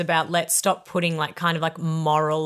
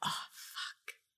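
barely voiced, whispered mutter under the breath. Retelling how a daughter swore, imitating a mutter under the breath. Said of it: "heard her mutter under her breath".

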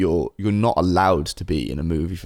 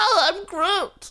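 put-on very high, small, squeaky baby voice. Joking about Vin Diesel switching from his own voice, Baby Groot voice. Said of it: "the Baby Groot voice".

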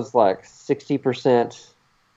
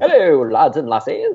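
fake, sing-song British accent done as a joke; 5 semitones higher than usual. Suggesting a co-host use a British accent on the show, in fake British accent. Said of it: "if you just want to have a British accent on the show".

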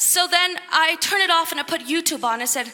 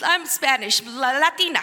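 ordinary talk, nothing marked

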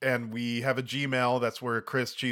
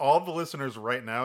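usual speaking voice

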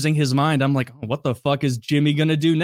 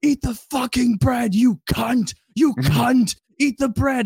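high-pitched screaming with no holding back; 9 semitones higher than usual. Speaker retells a story, imitating Jimmy screaming at a girl. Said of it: "Jimmy's just screaming at this girl like".

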